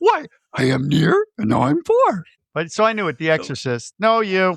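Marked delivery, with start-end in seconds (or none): 0.0-2.2 very high, swooping dumb puppet voice. Retelling the silly voices you did for her, in a Grover voice. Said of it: "the Grover it".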